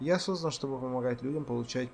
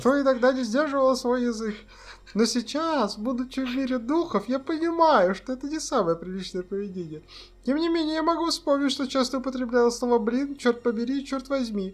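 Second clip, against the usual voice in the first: put-on old grandmother voice, very high, very loud; 12 semitones higher, 8 dB louder than usual. Answering a question about swear words in role as the grandmother, old grandmother voice. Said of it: "Или мне нужно это голосом бабушки?".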